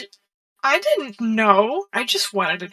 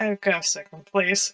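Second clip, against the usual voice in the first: hushed, slow mumble under the breath; 3 dB quieter than usual. Retelling their own reply to someone's question, muttering under breath. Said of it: "quietly under my breath".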